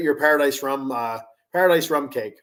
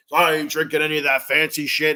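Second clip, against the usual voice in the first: put-on cranky tough guy voice. Quoting a cranky dad, in a tough guy voice. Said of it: "he says in a tough guy voice".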